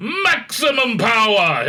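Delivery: high-pitched, slow, triumphant voice. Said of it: "Servalan's, uh, triumphant command".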